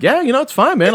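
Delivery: acted, high, very chill, laid-back, unbothered tone. Retelling a dream where a friend stayed calm: imitating a very chill friend. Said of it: "You're like".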